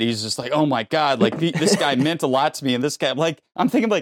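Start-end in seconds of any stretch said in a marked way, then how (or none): none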